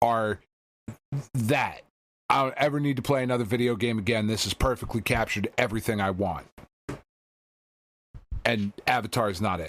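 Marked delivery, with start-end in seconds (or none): none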